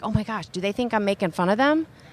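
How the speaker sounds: ordinary delivery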